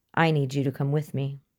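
plain reading voice

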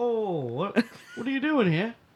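put-on English accent. Retelling an encounter, the speaker quotes the guy in a put-on english accent. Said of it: "why am I giving him an English accent?".

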